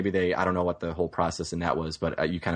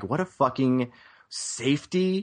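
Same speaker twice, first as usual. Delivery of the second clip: high, slow, drawn-out sarcastic scoff. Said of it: "I'm like".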